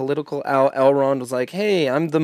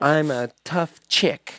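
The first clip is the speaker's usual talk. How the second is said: put-on girl voice with a lisp. Showing the others the girl voice they use, speak in girl voice with a lisp. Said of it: "that's my girl voice when I'm doing it".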